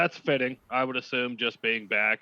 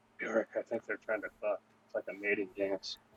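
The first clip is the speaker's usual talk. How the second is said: secretive, hushed half-whisper; 7 dB quieter than usual. Player repeating his half-whispered in-game remark to Bjork: half-whispering.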